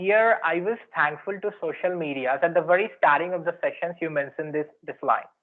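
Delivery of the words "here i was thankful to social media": ordinary talk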